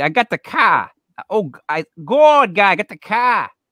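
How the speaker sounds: put-on strong, thick, drawn-out Boston accent laid on. Imitating how a woman talks, in a strong Boston accent. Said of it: "she has the most Boston accent you've ever heard".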